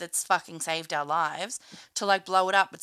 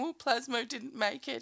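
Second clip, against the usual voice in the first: mock crying, higher and quieter; 5 semitones higher, 6 dB quieter than usual. Retelling Pasty's line after Plasmo seems dead: imitating crying.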